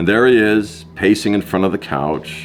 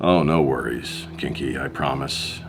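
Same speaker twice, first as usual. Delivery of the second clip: plain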